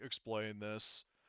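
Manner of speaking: deep robot soldier commando droid voice. Voicing a commando droid questioning the players: deep commando droid voice. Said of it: "in their, like, deep sort of voice is saying".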